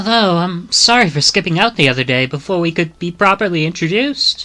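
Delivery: young boy's put-on British accent. Voicing the boy who trails behind Ukon, Kiru in boy British accent. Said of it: "he started with the, like, boy British accent".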